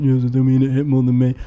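downcast, hurt, sad and sorry-sounding voice. Retelling a clip where someone looked really sad: imitating Simon sounding sad. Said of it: "looked really sad and went".

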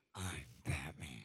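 very low, quiet, intimidating, threatening voice. Competing for who has the best 'I'm Batman' line: intimidating Batman voice. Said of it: "I'm kind of scared there a little bit".

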